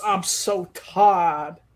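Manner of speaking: put-on Georgia accent. Mocking accent-switching, doing a Hillary Clinton put-on Southern accent. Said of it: "speaking with a Georgian accent. So like Hillary Clinton used to do".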